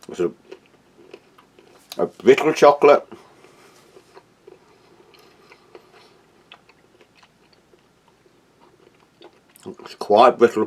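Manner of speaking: talking while chewing, mouth full. Tasting chocolate and describing it, talking with mouth full. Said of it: "Talking my mouthful".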